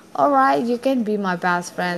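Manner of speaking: usual speaking voice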